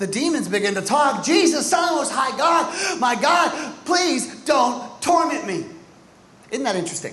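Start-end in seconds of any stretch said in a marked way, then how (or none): 1.2-5.6 mock high, loud crying out with raised voice. Retelling the story, the demons at Jesus' feet begin to talk, retelling a loud cry. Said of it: "crying out with a loud voice".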